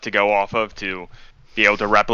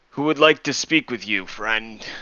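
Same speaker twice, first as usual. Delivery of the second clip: put-on old man's voice in a hushed half-whisper; 4 dB quieter than usual. Voicing an old man character addressing the guests: half-whispering old man voice. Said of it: "like an old man, like whispering".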